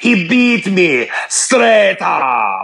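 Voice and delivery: put-on movie-style Russian accent. Repeating a line to test whether Russians would accept it, put-on Russian accent. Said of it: "Do Russians talk like that?".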